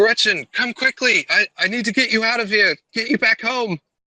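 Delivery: very high, yelled shout. Voicing a character as the fires spread quicker: shouting. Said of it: "he shouts".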